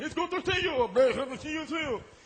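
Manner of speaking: goofy high laughing voice.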